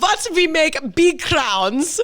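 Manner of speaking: put-on very high, terrible German accent. Telling a made-up story about someone in the back of a restaurant, in a terrible German accent. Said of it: "a terrible German accent".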